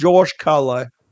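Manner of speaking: put-on British accent. Repeating a name while trying out his put-on british accent. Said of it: "Trying to do my British voice".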